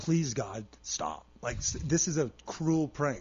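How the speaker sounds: put-on tearful, crying, pleading voice. Retelling a night of constant pain: imitating own crying plea. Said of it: "I was just, like, crying. I was like".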